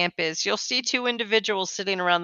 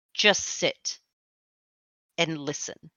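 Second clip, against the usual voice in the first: firm, hushed, commanding tone in a whisper; 2 semitones lower, 5 dB quieter than usual. A narrator voices a character ordering the player, in a firm, commanding tone. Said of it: "in a very firm and commanding tone".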